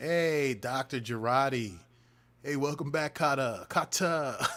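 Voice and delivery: loud, slow, drawn-out, bad Brooklyn accent. Saying a doctor's name like a Brooklyn high school teacher's: bad John Travolta impression. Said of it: "Sounds like a bad John Travolta impersonation".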